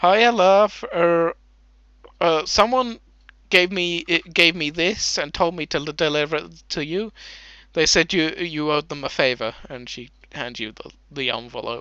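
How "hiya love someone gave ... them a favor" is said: friendly, cheerful woman's voice. Voicing a smiling clone lady handing over a letter: smiling clone lady voice. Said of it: "smiling, like, clone lady, like, looks at you and goes".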